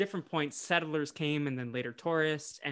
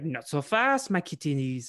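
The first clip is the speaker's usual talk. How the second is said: slow, clumsy, drawled, put-on bad French accent; 5 dB louder than usual. Retelling a cartoon scene, the speaker voices Jacques confronting Scooby and Shaggy, Jacques in a bad French accent. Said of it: "I can't do a French accent".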